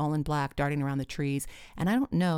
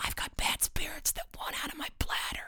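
whispered aside, hushed, under the breath; 12 semitones higher, 6 dB quieter than usual. Reading Tris's line, whispered to the narrator: whispering. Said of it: "Tris whispered to me".

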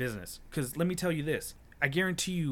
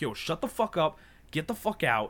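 put-on, blown-up, furious, angry outburst, temper lost; 3 semitones higher than usual. Retelling snapping at a man who was condescending about the speaker's business, retelling losing it angrily. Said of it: "That's when I kind of lost it".

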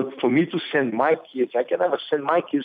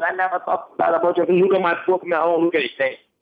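raised, pitched-up, insisting voice; 5 semitones higher than usual. Retelling a man's reply: imitating man raising voice. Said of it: "raised his voice".

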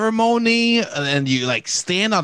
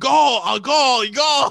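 mild, held-back, pitched-up yell; 5 semitones higher than usual. Retelling Arnold Schwarzenegger yelling in a strongman's face, retelling Arnold Schwarzenegger yelling. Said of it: "And he was just yelling".

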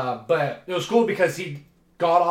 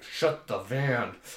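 hushed half-whisper under the breath; 4 semitones lower, 6 dB quieter than usual. Retelling a father's words at his arrest: imitating a half-whisper. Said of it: "And then he whispered".

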